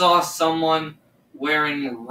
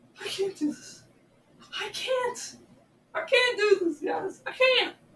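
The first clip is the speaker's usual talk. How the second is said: scared, breathy whisper, close to crying; 6 dB quieter than usual. Filming alone after seeing something in a reflection: scared, on the verge of tears. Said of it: "I'm just so scared".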